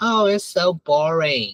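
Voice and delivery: ordinary talk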